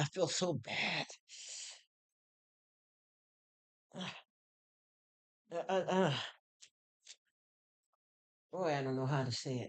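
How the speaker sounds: voice thick with emotion. Apologizing to the viewers, unable to talk right: choked up. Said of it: "and choked up and just having to".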